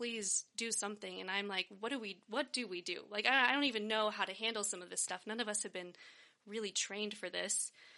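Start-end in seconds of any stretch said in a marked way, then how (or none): 0.0-1.2 mock pleading voice. Speaker recounting what pleading parents said to them, mock-pleading as the parents. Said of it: "they were pleading".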